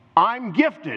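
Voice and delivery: high, proud, solemn, declaring tone. Leading a congregation to repeat after: declaring. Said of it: "I want you to declare this".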